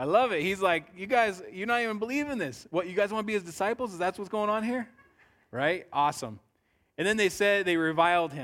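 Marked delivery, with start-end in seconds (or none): 1.0-4.9 mock, high, dripping sarcastic taunting tone. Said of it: "You guys see the sarcasm there?".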